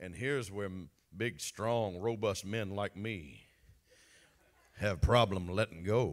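big voice, Texan. Speaker describing strong men like himself, in a big texan voice. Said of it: "That's that big Texan voice".

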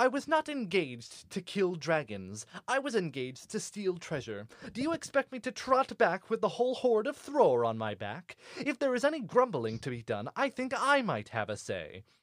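frustrated tone. Reading a tense exchange between Thorin and Bilbo aloud, frustrated Bilbo. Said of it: "Both of them are obviously quite frustrated at each other".

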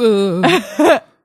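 high-pitched, loud, embarrassed groan. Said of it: "I was like".

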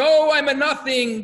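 put-on high, loud, long, drawn-out crying scream. Retelling a story of students in a study hall: imitating someone screaming. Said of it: "the other one is screaming".

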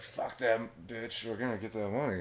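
hushed, secretive, conspiratorial stage whisper. Retelling a story, acting out characters half-whispering to the guys: imitating a half-whisper. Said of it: "whispering to the guys".

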